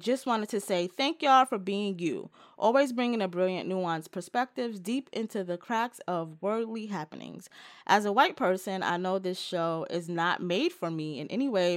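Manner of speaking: normal talking voice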